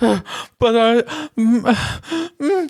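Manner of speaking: put-on high, halting struggle to get words out. Retelling her meltdown and attempt to talk: imitating someone struggling for words. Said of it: "She's like trying to get the words out".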